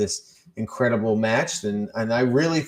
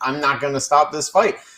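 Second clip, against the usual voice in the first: yelled voice; 3 semitones higher than usual. Retelling a fight, answering people asking to stop: retelling own yell. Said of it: "I'm literally yelling".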